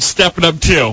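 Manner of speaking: acted, very stern and proud tone. Retelling a date's answer about the movie she saw: imitating a stern reply. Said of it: "she very sternly said".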